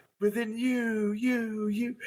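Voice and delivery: slow, fading, trailing echo of a repeated word. Joking with a co-host, repeating a guy's words in a trailing echo voice. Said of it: "You need that trailing voice".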